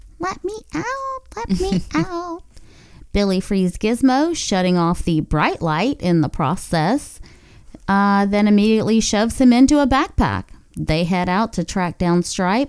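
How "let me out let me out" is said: very high, soft, small and sweet squeaky voice. Recapping a movie, Gizmo calls out from inside the laundry room, cute Gizmo voice. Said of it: "in the cutest fucking gizmo voice ever".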